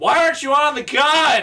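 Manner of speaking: put-on very high yelling. Retelling the boss fight where the speaker yelled at the wife: retelling yelling at wife. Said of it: "most of the boss fight was me yelling at my wife".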